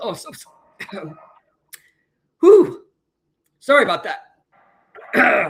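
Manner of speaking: coughing, clearing throat. Apologizing to another speaker mid-interview: coughing fit, throat irritated. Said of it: "Caught something in my throat".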